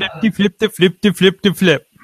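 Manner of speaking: mock Swedish-sounding gibberish voice. Opening a wrestling show with a co-host, blurting out a Swedish Chef impression. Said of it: "That's my Swedish fish impression".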